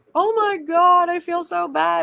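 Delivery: put-on tearful, heartbroken crying, high, loud, drawn out. Retelling a phone call made after dropping off a grandchild: imitating own past crying. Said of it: "I'm literally, like, crying".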